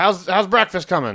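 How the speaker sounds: loud, high-pitched yell. Narrating a scene, voice a character who turns back and yells the line. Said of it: "he turns back and yells".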